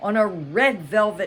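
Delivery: plain reading voice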